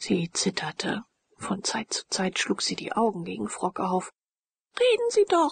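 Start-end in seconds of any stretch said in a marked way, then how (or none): 4.8-5.5 very high, imploring, pleading cry. Narrator reads Leonore's line to Frock, cried out. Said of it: "rief Leonore".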